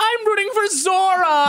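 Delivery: high, loud, mock gushing put-on voice.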